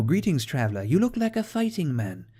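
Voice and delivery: put-on loosely Irish accent. Voicing a high elf companion in a game, with a kind of Irish accent. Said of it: "I went kind of Irish".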